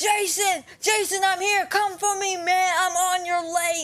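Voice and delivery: mock, high, shrill screaming at full tilt. Retelling what someone yelled mid-story, imitating someone screaming. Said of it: "And as he's screaming, he goes".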